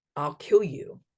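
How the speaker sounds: put-on demonic voice. Retelling a voice heard on the phone: imitating a demonic voice. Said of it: "hears a demonic voice saying".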